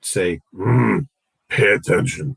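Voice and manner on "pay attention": gruff, deep British sat-nav style voice. Retelling what the device said whenever the speaker went over the speed limit: rough, deep British voice. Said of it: "in this rough, deep British voice".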